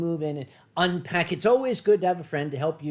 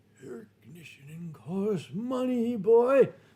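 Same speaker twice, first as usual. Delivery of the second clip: spooky, eerie, ghostly voice; 2 semitones higher than usual. Imagining a late father's ghost haunting the thermostat, speaker uses a ghostly voice. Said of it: "a ghostly voice would say".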